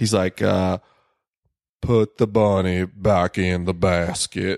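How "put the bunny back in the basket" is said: put-on Southern accent. Answering a request to imitate an accent: Nicolas Cage Southern accent in Con Air. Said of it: "an imitation of Nick Cage's accent in Con Air".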